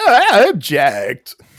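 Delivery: very high, loud, squeaking, protesting tone. Picturing a friend stumbling into court to object: squeaking voice imitating Connor. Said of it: "his voice squeaking".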